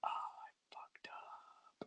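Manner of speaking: very slow, drawn-out, hushed whisper under the breath. Retelling a video where he walks toward the camera: retelling a whisper to himself. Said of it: "I'm just whispering to myself".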